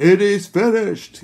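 very loud, high, ringing cry of triumph. Showing how Jesus' last words were once imagined: loud triumphant Charlton Heston-like voice. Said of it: "with that voice of triumph".

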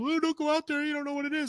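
very high, high-pitched yelling. Retelling being told not to go out there: imitating someone yelling. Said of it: "I'm getting yelled at".

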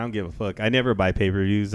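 ordinary talk, nothing marked

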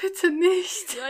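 stiff, frozen pleading tone. Retelling how she answered him, acting out her frozen plea. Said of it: "so richtig erstarrt".

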